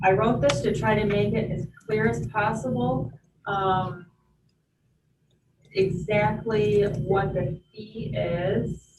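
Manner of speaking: very slow, unhurried, deliberate speech. Stalling while the text is pulled up on screen: talking very slowly. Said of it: "I'm talking very slowly".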